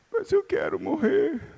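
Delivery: put-on trembling voice. Retelling a wife's words to her husband: imitating a trembling voice. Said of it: "com a voz bem trêmula".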